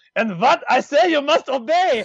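high-pitched fake German accent. Retelling what a boxing announcer kept saying: imitating a German accent. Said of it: "with the German accent".

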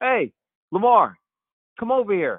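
very high, loud, swooping yelling call-out. Retelling how someone called him over across the court, retelling a yell. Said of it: "Jim yells across the court".

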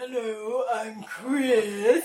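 put-on spooky old man voice. Trying a second impression of a fellow player: impression of Chris. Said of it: "That was worse".

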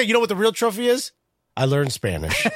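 ordinary talk, nothing marked

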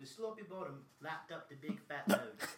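very loud, very slow put-on dialect. Performing a line on the spot after being asked for a dialect: put-on dialect. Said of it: "can you do a dialect?".

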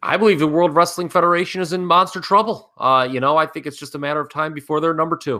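very high, fake-serious put-on sarcastic tone. Answering another speaker about wrestling promotions: put-on sarcastic tone. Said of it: "You're being sarcastic".

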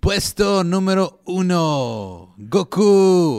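very slow, booming sports presenter announcer voice. Following a commenter's request, the speaker tries a league announcer voice. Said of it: "Le hace con voz de presentación de la liga".

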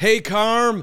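mock super-excited voice. Retelling a phone call, the speaker quotes Hogue answering, retelling Hogue's super-excited hello. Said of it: "like super excited".

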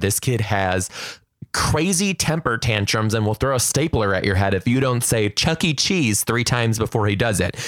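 ordinary talk

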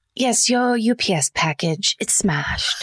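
put-on British accent. A caller in a skit delivers bad news in a british accent. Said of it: "deliver bad news in British accent".

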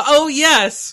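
mock scream, high-pitched and loud. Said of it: "Why would I scream".

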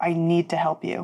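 hushed, very soft. A character answering the others, very quietly. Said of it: "she just says very quietly".

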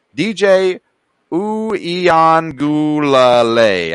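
extremely slow, deliberate pronunciation. Presenter introducing a quarterback, saying his name really, really slowly. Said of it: "I have to say it really, really slow".

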